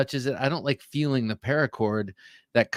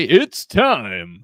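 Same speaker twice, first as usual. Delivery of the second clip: put-on ring announcer voice, louder; 7 dB louder than usual. Guest greets the hosts and viewers: Bruce Buffer announcer call. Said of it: "As Bruce Buffer would say".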